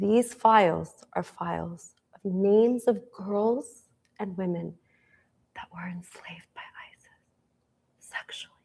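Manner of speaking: soft, hushed, guarded, secretive whisper. Retelling what a government employee said about the files: imitating a whisper. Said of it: "and she whispers".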